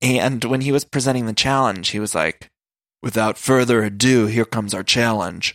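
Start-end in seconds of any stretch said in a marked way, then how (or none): 3.0-5.5 put-on gruff tough-guy voice. Retelling how a host introduced a challenge: imitating TJ Lavin's gruff voice. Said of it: "gruff kinda, gruff older man".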